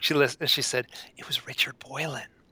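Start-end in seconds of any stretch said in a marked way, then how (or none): 1.2-2.2 mimicked hushed half-whisper. Retelling a phone call after a long pause, imitating her half-whisper. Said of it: "she's like kind of whispered".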